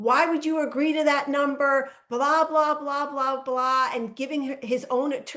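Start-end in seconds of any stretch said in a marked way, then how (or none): 0.0-3.9 loud, screaming, scolding voice. Retelling how an attorney yelled at his own client: imitating an attorney screaming. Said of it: "screaming at his own client".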